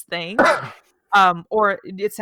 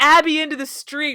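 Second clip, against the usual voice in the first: normal talking voice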